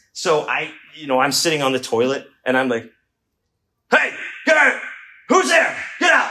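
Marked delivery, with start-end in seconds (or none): 3.9-6.3 very high, put-on, would-be tough yell. Retelling yelling from the toilet at someone banging on the gate, imitating a tough shout. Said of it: "I was trying to sound tough".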